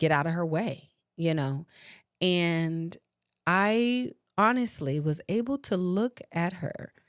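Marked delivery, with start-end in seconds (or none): 0.0-0.9 rough, gruff voice. Retelling what a stranger said on a flight: imitating a gruff remark. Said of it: "she gruffly said".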